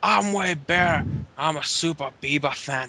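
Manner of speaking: bad mock accent that comes out Scottish-sounding. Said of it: "That, that sounded Scottish".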